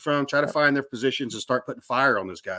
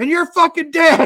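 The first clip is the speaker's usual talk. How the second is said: put-on screaming, higher and louder; 8 dB louder than usual. Retelling being at the tail of an ambush, imitating Matt screaming.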